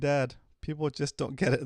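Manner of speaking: ordinary delivery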